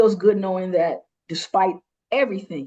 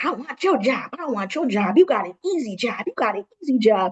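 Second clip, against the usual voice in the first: put-on needling, teasing, taunting repetition; 4 semitones higher than usual. Speaker retells a nurse's aide taunting them in the hallway, retelling a loud taunt. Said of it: "she's in the hallway being loud".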